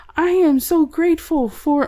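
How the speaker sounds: high, slow, drawn-out talking-dog voice. Comparing cats and dogs, voicing what dogs say in a Dug talking-dog voice. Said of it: "why am I talking like Doug?".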